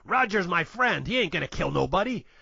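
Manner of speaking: put-on gruff man's voice with New York accent. Recounting the film plot as Baby Herman tips him off, gruff New York voice. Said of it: "He's like a New York gruff guy".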